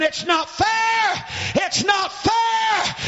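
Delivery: slow screaming, high-pitched.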